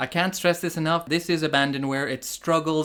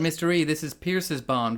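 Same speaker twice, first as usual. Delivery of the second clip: normal talking voice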